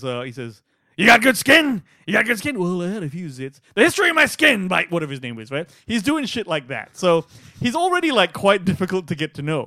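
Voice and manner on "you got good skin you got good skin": put-on gruff old colonel voice, loud and slow. Speaker retells a scene, quoting the colonel in a gruff old Frank Slade voice. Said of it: "completely a gruff old motherfucker".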